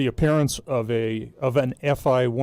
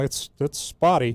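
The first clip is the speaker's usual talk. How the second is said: plain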